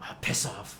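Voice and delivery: loud, breathy, forceful stage whisper meant to carry. Speaker retells what the lady closest to them said, retelling a loud whisper. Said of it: "like whispering loudly".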